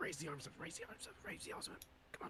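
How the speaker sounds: soft, urgent whisper. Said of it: "I'll whisper to Juniper".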